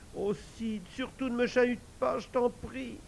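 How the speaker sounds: groaning. Tom answering Sid, moaning. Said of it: "Tom gémit".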